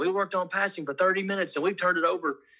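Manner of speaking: loud, high-pitched yell. Retelling a coach talking to the assistant coach: imitating a coach yelling. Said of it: "he's yelling at the assistant coach saying".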